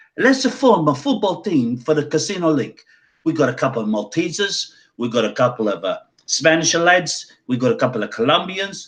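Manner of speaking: poor put-on Italian accent. Retelling what an italian man at a casino said to the speaker: bad italian accent. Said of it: "excuse the bad Italian accent".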